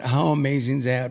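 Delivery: plain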